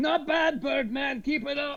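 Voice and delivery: very high, drawn-out, calling yell. Voicing a patron calling from a table: yelling from across the room. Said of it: "a voice from the table yells back".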